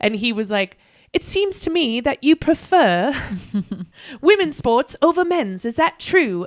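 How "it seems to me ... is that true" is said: put-on British accent, pitched up. Retelling what an older man at a bar asked: imitating a British accent. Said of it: "he had a British accent".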